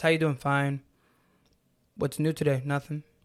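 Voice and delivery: lifeless, toneless, flat, mechanical monotone. Demonstrating a negative symptom with mechanical responses, in a flat monotone voice. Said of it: "not really much intonation in their voice".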